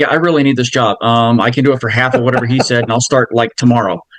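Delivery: ordinary talk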